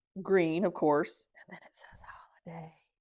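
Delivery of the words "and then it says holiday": very quiet, breathy whisper. Showing off a thermos found upstairs, the speaker reads its label whispering. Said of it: "I had to whisper that".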